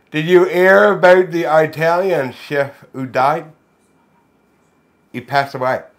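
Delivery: talking with lips pulled down over teeth. Reading a joke as asked by the game, lips covering teeth. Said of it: "with your lips covering your teeth".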